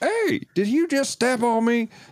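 put-on very high country accent. Quoting a character's line from the American dub: country redneck accent. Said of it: "country, like, redneck accent".

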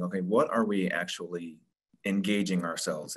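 ordinary delivery

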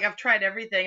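usual speaking voice

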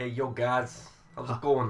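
put-on guy voice with a Brooklyn accent. Improvising a character called Hoz who enters greeting the guys, Hoz in a Brooklyn accent. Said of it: "I was going more for a Brooklyn guy".

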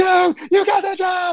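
mock very high-pitched, excited, celebratory shrieking. Retelling a video message sent to someone who got the job: imitating own past screaming. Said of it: "just screaming".

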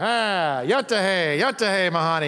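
mock movie-style speech. Retelling calling her father for help, imitating his fake Comanche talk. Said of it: "He talked like a Comanche Indian".

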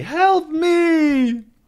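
shrill, very loud yell with "me" stretched out. Reading a story aloud, the narrator gives a character's cry: shouting for help very loudly. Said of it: "very loudly".

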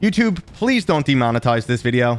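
usual speaking voice

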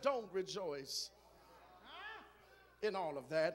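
nice, cool, calm, very soft and low voice. Preaching, the speaker acts out Jesus's words to them in a put-on nice calm cool voice. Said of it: "in a nice, calm, cool voice".

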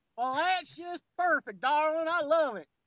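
put-on Western drawl. Speaking to the other person in a put-on Western drawl. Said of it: "Why are we talking like this?".

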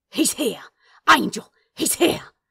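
very loud, frightened, terrified hissing. Reading a story aloud, voicing a panicking demon, terrified hiss. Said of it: "He hissed, suddenly terrified".

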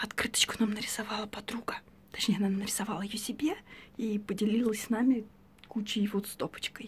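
whispered voice. Speaker who lost her voice after a fever, talking to viewers, whispering. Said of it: "Поэтому я говорю шепотом".

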